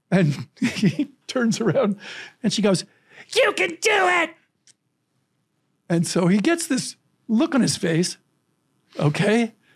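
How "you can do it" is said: put-on very high, cheering little-girl shout. Telling how a six-year-old girl yelled to a batter: imitating a little girl yelling. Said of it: "And she yells to this guy".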